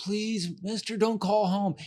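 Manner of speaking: high, pleading, begging schoolkid voice. Retelling students begging the teacher not to call home, imitating a pleading kid. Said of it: "they plead with you".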